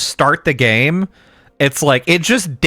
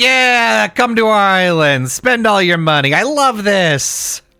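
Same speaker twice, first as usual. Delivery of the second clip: fake happy, high, slow, forced cheer; 5 semitones higher than usual. Imitating tourist-area workers who must look happy: imitating forced smiling cheerfulness. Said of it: "You gotta be smiling".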